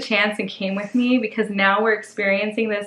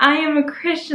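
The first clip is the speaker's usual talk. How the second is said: acted-out joyful, happy delivery, pitched up; 6 semitones higher, 3 dB louder than usual. Retelling a friend repeating a prayer in church: imitating a friend saying it happily. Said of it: "so happy".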